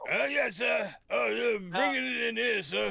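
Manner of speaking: very high, slow, rough, creaky put-on disguise voice. Imitating a disguised character's servile lines: imitating a convincing disguise voice. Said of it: "he does such a convincing voice".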